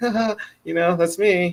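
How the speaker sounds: naive, dopey tone. Describing how the English Spike sounds, naive, kinda dumb Spike voice. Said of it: "kinda dumb about it, just kinda naive".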